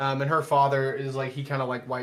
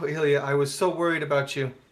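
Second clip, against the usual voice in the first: weeping, crying with relief. Voicing a father reunited with his daughter: weeping father. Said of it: "he just starts weeping".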